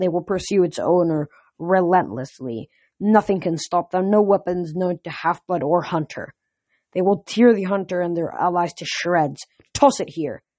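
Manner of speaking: plain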